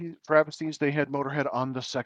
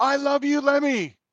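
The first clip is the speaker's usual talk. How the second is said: mock very high, long, drawn-out yell; 11 semitones higher, 3 dB louder than usual. Retelling a moment between sets at a concert: retelling own yell. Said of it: "and I yelled".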